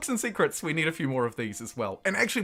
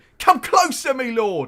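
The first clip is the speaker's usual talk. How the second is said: very loud, slow, bad English accent; 8 semitones higher, 9 dB louder than usual. Reading a faraway merchant's line in a game: bad English accent. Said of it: "a New Zealander doing a bad English accent".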